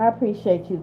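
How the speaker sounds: ordinary delivery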